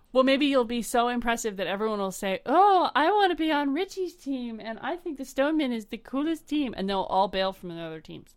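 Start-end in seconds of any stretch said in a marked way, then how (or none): 2.4-6.7 goofy puppet-like voice. Imagining everyone saying they want to join Richie's team, in a Muppet-like voice. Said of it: "when you do that, you sound like a Muppet".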